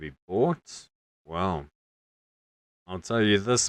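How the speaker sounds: put-on Welsh-accented tavern keeper voice. Game master voicing the tavern barkeep as a player offers gold, Welsh accent. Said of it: "but he is Welsh in his accent. / the man pulls out 2 wooden tanards and he plops them down in front of you, / Barkeep, / but he is Welsh in his accent".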